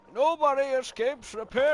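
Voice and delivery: full-throated high shout. Quoting a cartoon villain's line: Bane shouting. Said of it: "he's still shouting".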